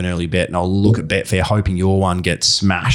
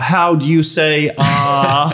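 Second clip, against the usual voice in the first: put-on Dutch accent, higher pitch, slow pace; 8 semitones higher, 3 dB louder than usual. Retelling an interview moment, imitating Steve McLaren putting on Dutch accent. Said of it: "he starts, like, using her accent".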